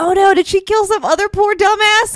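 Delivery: high, alarmed, worried tone.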